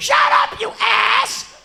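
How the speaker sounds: very loud, very high, shrill raspy yell. Retelling a coworker shouting through the bathroom door: imitating Heidi yelling. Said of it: "She only yells".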